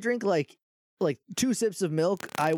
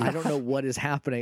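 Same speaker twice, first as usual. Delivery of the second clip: ordinary talk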